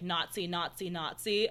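normal talking voice

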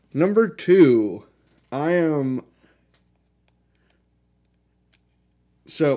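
muffled speech through a mouthful of food. Giving a pick while still eating, talking with mouth full. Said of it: "sorry, I had something in my mouth".

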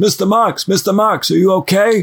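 put-on heavy Brooklyn accent, high, slow and drawn out. Retelling the story, the speaker voices a man waking Marx in a thick Brooklyn accent. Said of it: "a man with a thick Brooklyn accent who goes".

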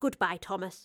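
ordinary delivery

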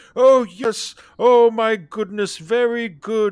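very high, loud, patronizing tone, pitched way up. Retelling how a doctor patronized a patient, doing a First Doctor impression. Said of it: "your First Doctor impression is improving".

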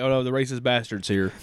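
plain

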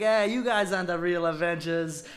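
put-on Queens accent. Describing a movie trailer scene, quoting him in a really Queens accent. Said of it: "in this like really Queens accent".

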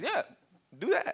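dry, lightly sarcastic tone. Reading a Bible line aloud and hearing it another way: imitating Jesus being sarcastic. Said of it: "a little bit of sarcasm in Jesus' voice".

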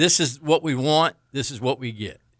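normal talking voice

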